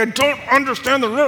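fed-up angry voice. Retelling how one guy complained during the riddle game: imitating an angry, upset guy. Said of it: "so upset, getting so angry".

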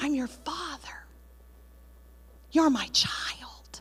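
gentle, soft, quiet whisper. Preaching, quoting the heavenly father to his child: quietly whispering. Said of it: "He quietly whispers".

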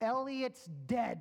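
stern, firm, with no softening. Retelling a man's reply to the speaker's brother, retelling a stern reply. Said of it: "with the stern voice".

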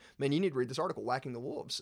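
ordinary talk

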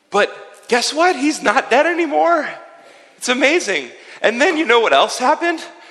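breathless panting, high pitched. Playing a follower who has run from village to village telling everybody: out of breath. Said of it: "I need to catch my breath".

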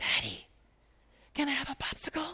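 yelling in a hushed whisper. In a movie theater, a father retells his child asking for a popsicle: imitating Jackson's whisper-yell. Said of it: "this is like whisper yelling".

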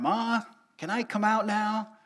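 acted, loud high yelling. Retelling being stuck in their room, the speaker calls down to their mother, retelling a yell. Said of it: "and I yelled down".

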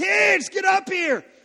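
very loud, booming, very slow, drawn-out angry stern dad yell. Retelling calling the kids into the bathroom, the speaker uses his put-on angry dad voice. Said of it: "I use my angry dad voice".

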